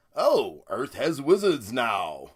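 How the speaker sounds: slow, deliberate, drawn-out character voice. Quoting a movie line, doing a Thor impersonation. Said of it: "that's my Thor impersonation".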